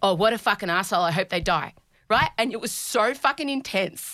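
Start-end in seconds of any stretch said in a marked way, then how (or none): none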